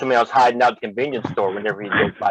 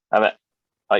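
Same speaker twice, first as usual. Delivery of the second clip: ordinary talk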